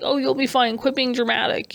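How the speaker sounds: ordinary talk, nothing marked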